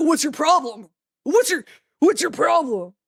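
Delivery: really angry, confrontational tone. Retelling how a stranger reacted when a friend held the door, imitating an angry man. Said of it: "Like really angry".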